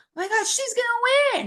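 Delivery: high, wide-pitched, alarmed gasp and exclaiming.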